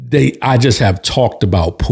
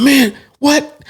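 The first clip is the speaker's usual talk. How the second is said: very high, stunned disbelief. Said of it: "and so he's like".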